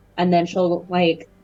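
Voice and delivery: ordinary talk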